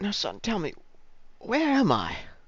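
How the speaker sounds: concerned whisper. Narrating a scene where a man leans in close to your ear, concerned whisper. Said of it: "leans forward and whispers in your ear, kind of concernedly".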